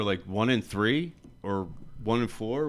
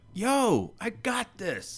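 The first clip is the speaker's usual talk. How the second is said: very high, very slow, drawn-out holler; 12 semitones higher than usual. Describing a player's confidence, quoting him calling to the sideline, retelling a yell. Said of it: "yelled at the side like".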